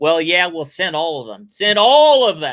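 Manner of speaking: very loud, swooping, swaggering, cocky boast. Retelling a film character's reply: imitating a cocky reply. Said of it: "then he got all cocky and said".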